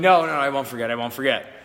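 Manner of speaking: ordinary talk, nothing marked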